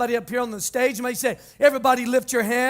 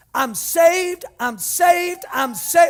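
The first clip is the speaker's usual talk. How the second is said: put-on, high, drawn-out scream at top volume; 5 semitones higher, 4 dB louder than usual. Retelling throwing a hand up in the car: reenacting screaming at the top of lungs. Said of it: "I start screaming at the top of my lungs".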